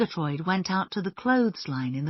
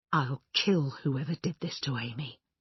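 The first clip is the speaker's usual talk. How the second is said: hushed, quiet, low-pitched voice; 5 semitones lower, 5 dB quieter than usual. Looking down at a body on the grass, the younger woman speaks in a low, quiet voice. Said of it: "said in a low, quiet voice".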